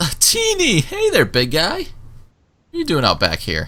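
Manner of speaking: sloppy, easygoing character voice. Voicing Aubrey greeting a player: Aubrey with a big sloppy grin. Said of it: "a big sloppy grin goes".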